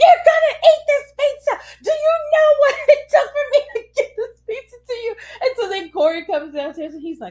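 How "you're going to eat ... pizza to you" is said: very high, shrill, furious, unhinged yell. Retelling forcing pizza on a child, imitating own furious yelling. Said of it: "Mommy Dearest lost it".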